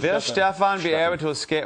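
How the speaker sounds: fake German accent. Asking a guest a question, joking: put-on german accent. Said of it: "actually, that was German".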